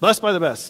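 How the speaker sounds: rushed, words blurred together into one quick word. Quoting a phrase she would say, said really fast, run together. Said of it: "She could say it really fast, so it all sounded like one B word".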